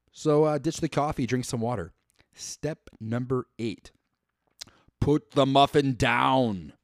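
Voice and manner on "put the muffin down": clumsy put-on tough-guy voice, slow, dragged downward. Listing steps, step number eight: bad Arnold Schwarzenegger impression. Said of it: "probably the worst Arnold Schwarzenegger voice ever".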